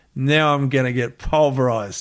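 plain

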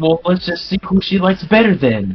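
smug, high, goading, taunting tone. Playing a character challenging a rival: taunting in character. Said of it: "in a way that suggests".

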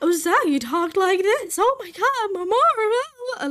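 put-on high, loud, squeaky dopey cartoon girl voice.

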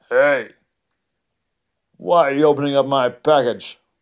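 big, booming, loud, insistent giant voice. Reading a story aloud, the giant calls out in a big booming voice. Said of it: "they heard a big booming voice".

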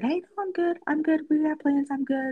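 mock very high, easygoing, gentle voice. Speaker recounts turning down plans, retelling a gentle refusal. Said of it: "very gently said".

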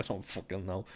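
ordinary delivery

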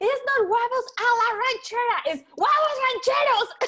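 mock high screaming yell. Retelling reacting to a show's wrong dish name: imitating screaming at the tv. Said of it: "The whole time I was just screaming at the T V".

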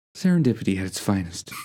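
voice that is mostly air, airy and breathy. Asked to do the other speaker's voice: airy, breathy impression. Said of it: "it sounds like there was just air in my voice".

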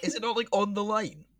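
high voice shooting sharply upward. In a debate over whether a shot was on the line, voice going high. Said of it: "as wide as your voice just went high".

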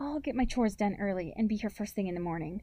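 ordinary delivery, nothing marked

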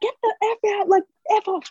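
mock piercing, very high, shrill scream. Retelling what was yelled at the TV: imitating own screaming. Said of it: "the whole time I was screaming".

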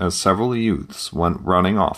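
ordinary delivery, nothing marked

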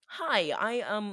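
computer-read text-to-speech narration voice. Describing a viral video, imitating the TikTok text-to-speech voice. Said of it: "it's a TikTok voice where it goes like".

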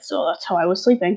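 ordinary talk

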